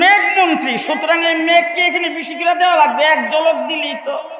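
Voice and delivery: high, booming, boastful angel voice.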